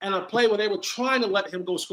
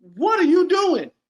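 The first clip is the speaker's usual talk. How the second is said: very high-pitched, loud yell; 11 semitones higher, 7 dB louder than usual. Recounting the Panthers' play caller starting to pass the ball, retelling a yell. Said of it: "I'm yelling at".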